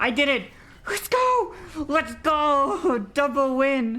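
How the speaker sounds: thrilled, excited victory yelps, very high. Gamer finally winning a round on stream, excited yelping. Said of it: "She's yelping".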